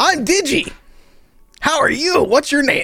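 cartoon unicorn voice. Voicing a cartoon unicorn greeting a player: cartoon unicorn voice. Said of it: "a cartoon unicorn just kinda".

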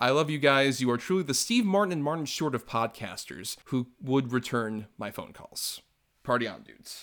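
ordinary talk

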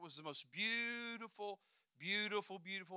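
dripping with sarcasm, insincere and mocking tone. Describing the view across from their apartment to listeners, sarcastic. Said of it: "I pray you're hearing the sarcasm in my voice".

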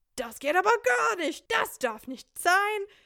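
worked-up German speech. Acting out their German customer service tactic: raised, mock-worked-up voice. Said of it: "start raising your voice and getting all worked up, like".

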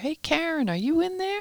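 put-on, very high calling yell. Speaker recounts the nanny calling from the front door: retelling a yell. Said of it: "she yells from the front door".

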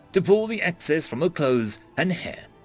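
plain

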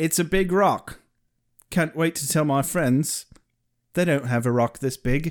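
ordinary delivery

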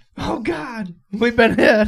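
high, panicked, alarmed cry. Retelling Dad's story of men on deck thinking they hit a mine: acting out panic.

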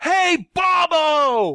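very high yell with one word drawn out. Retelling sticking their head out the window to greet Hobo Bobo: retelling own yell. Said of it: "I stuck my head out the window and I yelled".

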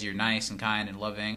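plain

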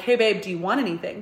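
ordinary delivery

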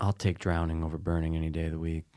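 speaking very quietly. Talking about terrible ways to die, talking very quietly. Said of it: "you're talking very quietly".

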